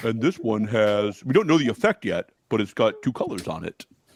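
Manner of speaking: put-on monotone reading voice. Apologize, then read this out to the others in a Carson monotone voice. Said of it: "Let me read this Carson monotone voice".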